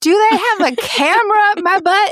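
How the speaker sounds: high, loud, outraged squeal. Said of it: "She was like".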